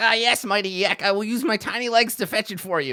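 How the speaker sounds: very high, tiny goblin squeak. Voicing a goblin answering Yak's order: goblin minion voice. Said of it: "they're just like".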